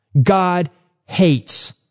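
normal talking voice

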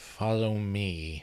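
teeth clenched, trembling words. A former friend fighting to control his hot fury speaks again, through gritted teeth, shaking. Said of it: "but through gritted teeth, shaking".

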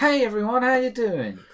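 shrill, booming, cheery voice, very high and loud. Imitating how workers in Florida greet everyone: imitating a jovial greeting. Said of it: "didn't quite get the same jovial".

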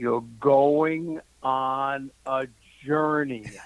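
mock eerie, portentous, mysterious fortune-teller voice. Speaker retelling what the tea-leaf reader told them, imitating a very mysterious voice. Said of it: "she said in a very mysterious voice".

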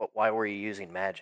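whispering in character. Getting close to Cody and asking about the magic: whispering in character. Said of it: "I'm gonna whisper".

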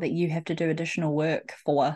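ordinary talk

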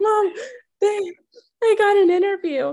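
play-acted breathless, slow, weeping, sobbing voice. Retelling a daytime call to her mom, retelling her own sobbing. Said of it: "I'm sobbing".

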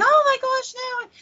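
very high, loud, drawn-out panicked shriek. Telling a spooky story where the kids freak out: retelling kids screaming. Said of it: "they're screaming".

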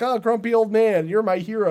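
put-on childish small-boy voice. Retelling a movie scene, quoting a little kid: imitating a little kid. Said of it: "a little kid is like".

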